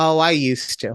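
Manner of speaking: put-on sassy tone. Retelling a coworker's answer said without missing a beat: imitating a sassy reply. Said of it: "she's sassy".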